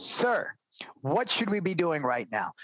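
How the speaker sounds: put-on stern teacher voice. Retelling stopping two kids about to fight, the speaker reenacts a stern voice. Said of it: "with a stern voice and said".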